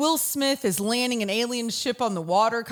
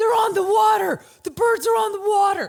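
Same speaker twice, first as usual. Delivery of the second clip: very high, loud, raised shouting scream; 10 semitones higher, 6 dB louder than usual. Retelling seeing birds on the water at Mobile Bay with family, re-enacting own screaming. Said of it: "I'm screaming".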